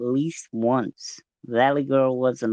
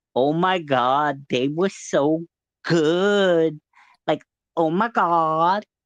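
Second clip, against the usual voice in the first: put-on full valley girl speech pattern. Showing a phrase that makes the speaker sound like one, in a valley girl voice. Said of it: "makes me sound like a valley girl".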